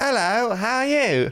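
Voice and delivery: very high, slow put-on British accent. Retelling talking after a weekend with a British family: imitating own put-on British accent. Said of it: "slipping into his accent".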